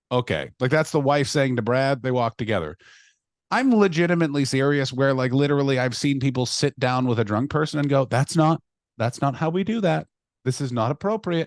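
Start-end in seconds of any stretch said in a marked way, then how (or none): 8.0-11.4 play-acted soft, gentle, calm therapy voice. Imitating people talking to a drunk person, mimicking a soft therapy voice. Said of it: "this is not the time for the soft therapy voice".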